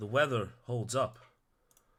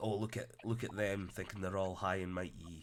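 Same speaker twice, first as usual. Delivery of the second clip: ordinary talk, nothing marked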